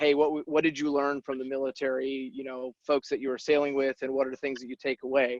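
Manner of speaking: ordinary delivery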